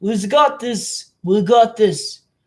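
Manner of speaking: put-on Russian accent drifting toward Australian. Telling a history story, voicing the Russians in a put-on Russian accent. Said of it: "let me say Russian voice".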